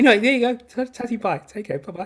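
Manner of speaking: voice catching with emotion. Saying goodbye and thanking everybody at the end of a Zoom: choked up with emotion. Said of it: "I'm choking up here".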